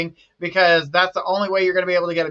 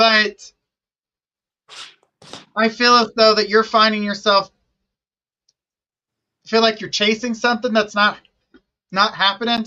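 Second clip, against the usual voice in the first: hiccuping while speaking, faster; 2 semitones higher than usual. Speaker answering whether they miss you: talking through hiccups. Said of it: "Sorry, hiccups".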